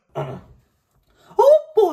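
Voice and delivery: high, loud, swooping squeal. A speaker who prepped voices for a guest tries a Mickey Mouse voice. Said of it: "so I prepped my Mickey Mouse".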